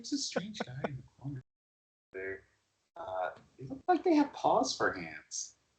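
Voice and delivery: very quiet, hushed half-whisper. Half-whispering in character while leading a character to the bar: half-whispering in character. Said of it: "And I'll whisper to him".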